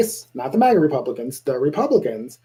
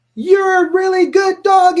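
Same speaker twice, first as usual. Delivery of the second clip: strict, stern, raised, very high voice; 6 dB louder than usual. Showing praise for a dog said with a stern tone. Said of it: "with a stern tone".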